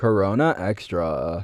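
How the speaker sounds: countdown-video voice, stretching final "-na" and "-tra". Imitating a YouTube countdown-video guy: lengthened final syllables. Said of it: "He like lengthens the last syllable of every word".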